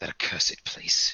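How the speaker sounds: muttering under breath. Voicing a character reacting to mention of an establishment: whispering under breath. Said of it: "Olga just whispers under breath".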